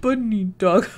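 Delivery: tearful laughter, a little crying. Voicing a character who is a little sad: laughing while a little crying. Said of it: "He's a little crying".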